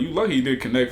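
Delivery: plain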